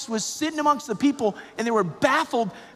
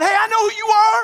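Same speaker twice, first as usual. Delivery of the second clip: raised, high crying out; 8 semitones higher, 8 dB louder than usual. Preaching on the gospel, voicing the disruptor who cries out; raised voice, crying out. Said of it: "the reason why I kind of raise my voice".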